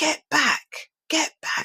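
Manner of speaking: mock shouting, very high pitched, loud. Retelling a stranger in a shop queue, imitating a man shouting. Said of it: "the way he shouted".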